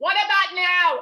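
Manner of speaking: very loud, high-pitched shouting. Mom, unsure her son hears her through a magic orb, shouting up. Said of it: "I'm shouting up".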